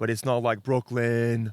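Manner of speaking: bad put-on New York accent, loud, drawn out. Speaker attempts an accent on the spot, comparing london and brooklyn: bad new york accent. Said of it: "Bad New York accent".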